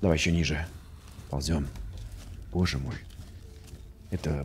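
very soft, low, hushed voice.

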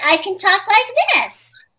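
put-on three-year-old's voice, high and loosened up. Explaining voice acting, demonstrating a 3-year-old voice. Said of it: "But for a 3-year-old, you just, you know, let it a little looser".

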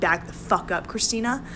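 ordinary talk, nothing marked

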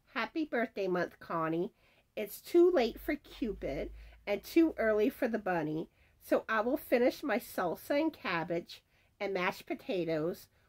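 ordinary talk

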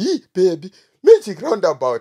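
loud, panicked voice. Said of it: "my wife panicked".

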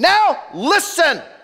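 loud yelling. Preaching on a scripture exhortation, matching the passage's tone: yelled. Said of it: "why are you yelling? Because that's the tone of the passage".

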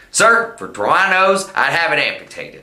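aggressive, combative, challenging, confrontational tone. Showing how varying the tone changes what is said: aggressive tone. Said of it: "Suppose aggressive".

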